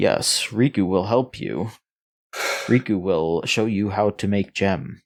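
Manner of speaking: speaks in a creature character voice. Speaker describes a game's Nopon character by doing the Riku voice. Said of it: "Riku sounds like this. He's like".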